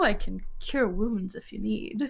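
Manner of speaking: muttering under breath. Player's character in a tabletop game offering to cure wounds, muttering under breath. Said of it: "She kind of she kind of mutters under her breath".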